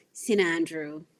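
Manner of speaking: nasal, through-the-nose delivery. Explaining how to refer to the high school: nasal Saint Andrew. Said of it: "you have to say it with with an annotation in your nose".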